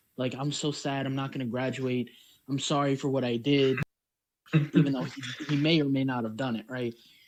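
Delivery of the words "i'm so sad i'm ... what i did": put-on pleading, apologetic, sorry begging voice. Retelling how a student went back to the teacher: imitating someone pleading. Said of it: "goes back to this woman pleading".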